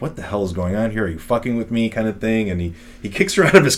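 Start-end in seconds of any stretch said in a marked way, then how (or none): 0.0-1.9 mock panicked freak-out delivery. Retelling a story about a man in his car, acting out him freaking out. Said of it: "and Joel's freaking out".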